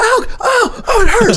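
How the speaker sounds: put-on pained scream. Telling how a man caught on barbed wire kept screaming, retelling a pained scream. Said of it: "he's just screaming".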